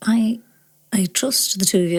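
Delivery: very quiet, soft speech. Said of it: "very quietly to Daniel".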